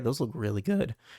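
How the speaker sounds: voice cracking. Looking through someone's collection of pops, voice cracking. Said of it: "my voice just cracked".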